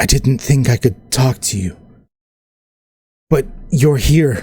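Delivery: mild, kindly, gentle and simple tone. Narrator voices a being that speaks to the listener, in a soft voice. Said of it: "And you hear a soft voice".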